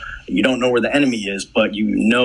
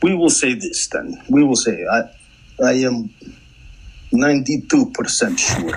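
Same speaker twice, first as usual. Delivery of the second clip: bad, fake put-on Russian accent. A podcast host talking about smoke use in World War II tanks, in a bad Russian accent. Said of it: "went bad Russian accent".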